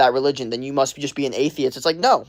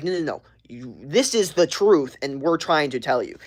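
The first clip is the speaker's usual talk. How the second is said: normal talking voice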